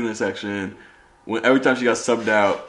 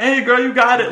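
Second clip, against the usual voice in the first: put-on shrill, very high-pitched cheering scream; 13 semitones higher, 4 dB louder than usual. Recalling shouting encouragement to her at halftime, retelling own screaming. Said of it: "I'm screaming".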